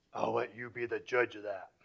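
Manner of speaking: deep, grizzly low rumble, very quiet. Recounting a man's reply to the speaker's question at an event: deep, grizzly voice. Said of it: "In his deep, grizzly voice".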